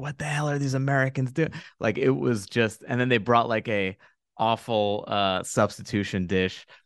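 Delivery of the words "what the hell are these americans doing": put-on whisper, slightly higher pitch. Retelling how people at a restaurant reacted to a returned dish: imitating people whispering. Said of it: "people whispering".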